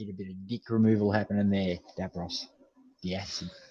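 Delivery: loud New Zealand accent throughout. Joking with davros during banter, in a kiwi accent. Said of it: "I'm starting to get good at the whole Kiwi accent".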